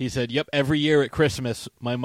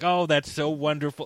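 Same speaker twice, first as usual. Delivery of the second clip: put-on amused laugh, higher pitch; 3 semitones higher than usual. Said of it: "he laughed, and he was like".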